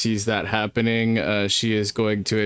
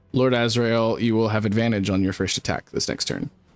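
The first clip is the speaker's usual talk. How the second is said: normal talking voice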